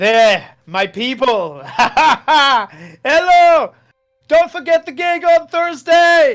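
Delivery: delighted screaming. Voicing Beeper on a flying carpet calling to people below: screaming with delight. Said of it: "he starts screaming down with delight".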